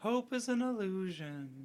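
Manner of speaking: put-on high, happy, wistful, very high, slow childlike voice. Imitating a little glowing star character from a movie: happy childish wistful voice. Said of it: "this happy, like, childish, wistful voice".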